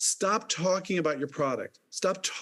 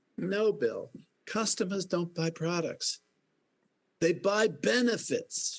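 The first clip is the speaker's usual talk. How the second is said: slow, put-on attempt at a Boston accent; 3 semitones higher than usual. Retelling someone's reply to him in a put-on Boston accent. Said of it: "I'm trying a Boston accent".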